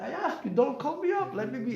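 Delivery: put-on high, screaming old man voice. Retelling how an old man in a synagogue shouted at the gabbai: imitating an old man screaming. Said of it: "he's screaming at the gabbai".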